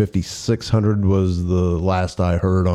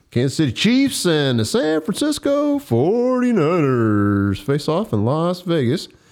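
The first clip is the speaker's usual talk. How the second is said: big, high, swooping put-on radio announcer voice; 9 semitones higher than usual. Speaker introduces the next topic to the group in a radio announcer voice. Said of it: "He went in the radio voice".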